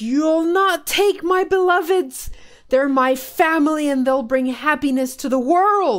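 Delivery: enraged battle cry, high-pitched and very loud. Narrator voicing a man wrapped in greenery who draws a scimitar, angry. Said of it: "he draws a scimitar and angrily goes".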